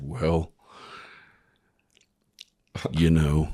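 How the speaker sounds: smooth, velvety, buttery, slow, unhurried delivery. Retelling an embarrassing encounter, quoting Paul's reply; imitating Paul's buttery tones. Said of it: "comes in with those buttery tones".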